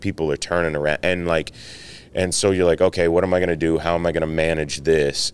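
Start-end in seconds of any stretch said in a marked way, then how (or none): none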